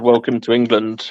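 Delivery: ordinary talk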